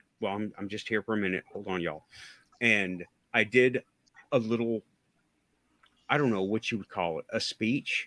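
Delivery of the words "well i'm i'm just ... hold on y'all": timid, sheepish, quick and soft. Retelling going back in to face the group: retelling a sheepish entrance. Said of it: "I went in sheepishly like".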